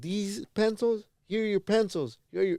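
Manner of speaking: fed-up, snapping delivery.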